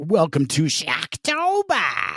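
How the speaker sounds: aggressive, swooping radio DJ hype voice. Saying the host's nickname the way a radio DJ would, radio DJ voice. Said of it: "That's how a radio disc jockey would say it".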